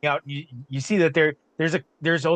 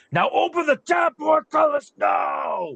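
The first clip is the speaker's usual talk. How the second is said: booming, very high-pitched, drawn-out voice; 12 semitones higher than usual. Acting out what he commanded in the story, booming voice. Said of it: "You hear his voice booming".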